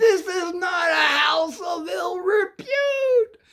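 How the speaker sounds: very high, very slow, shrill, drawn-out scream. Retelling how dad burst in on them: imitating dad screaming. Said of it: "And he's screaming".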